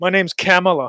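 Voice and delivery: loud, insistent American voice. Imitating Kamala Harris saying her own name: imitating Kamala Harris sounding American. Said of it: "Trying to sound like more".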